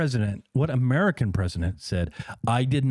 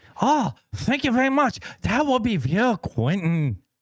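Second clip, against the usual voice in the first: put-on elderly man voice, pitched way up; 11 semitones higher than usual.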